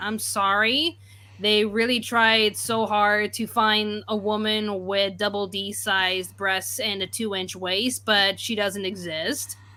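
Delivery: ordinary delivery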